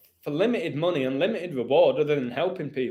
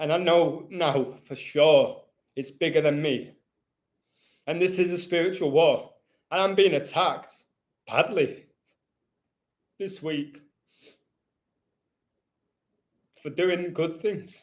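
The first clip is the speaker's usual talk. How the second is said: speaking while crying, tearful. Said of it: "I never cry, man".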